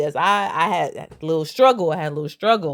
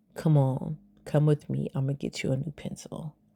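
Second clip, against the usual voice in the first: soft, hushed whisper close to the ear; 4 semitones lower, 8 dB quieter than usual. Retelling what was said after he knocked a desk over: retelling a whisper. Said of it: "I whispered in his ear".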